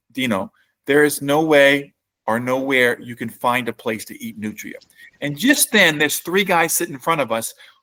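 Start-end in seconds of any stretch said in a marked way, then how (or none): none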